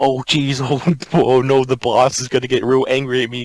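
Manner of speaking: thick New York accent. Imagining how some guy would sound, thick New York accent. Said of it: "some guy with like a thick like New York accent".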